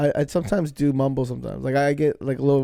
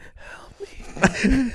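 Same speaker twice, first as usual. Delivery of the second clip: tiny, small, high, pleading little voice; 10 semitones higher than usual. Picturing a buried earthquake victim: put-on small voice calling for help. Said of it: "It's a small voice going".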